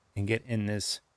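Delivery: plain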